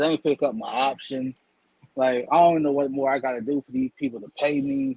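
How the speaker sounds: ordinary talk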